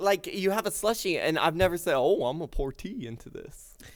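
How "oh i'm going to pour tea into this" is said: teasing, mocking put-on voice. Teasing the other speaker by imitating them: mocking imitation. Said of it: "now you're using a voice".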